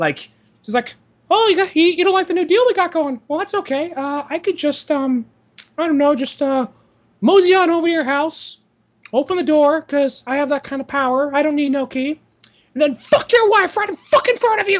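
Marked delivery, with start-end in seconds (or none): 1.3-14.8 very high, pitched way up cartoon voice. Imagining a cartoon mascot threatening someone over a business deal: imagined Mickey Mouse threatening. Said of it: "I almost just imagine Mickey saying that".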